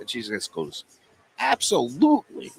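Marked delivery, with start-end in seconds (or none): 1.4-2.5 put-on New York accent, much higher. Retelling what the girl at the register said, in a New York accent. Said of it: "with the New York accent".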